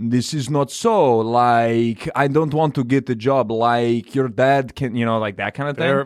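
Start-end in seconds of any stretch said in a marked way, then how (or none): 0.0-4.9 put-on speech with a Moldovan accent. Describing a deep-voiced Moldovan guy on a show, doing a Moldovan accent impression. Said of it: "Very good Moldovan".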